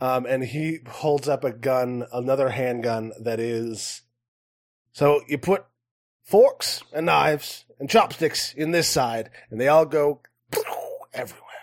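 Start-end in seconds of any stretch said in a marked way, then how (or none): 4.9-11.5 fast, rattled-off goblin voice with salesy patter. A game master voicing a goblin showing off his guns for sale, goblin voice. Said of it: "is a goblin".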